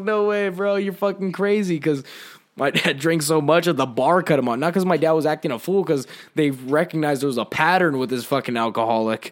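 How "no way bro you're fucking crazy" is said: acted words broken up by laughter, pitched up.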